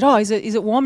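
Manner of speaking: ordinary talk, nothing marked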